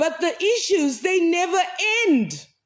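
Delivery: loud and emphatic. Speaker apologizes mid-sentence for raising their voice; raised voice. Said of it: "I'm sorry that I'm raising my voice".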